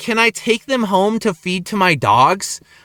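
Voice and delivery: ordinary talk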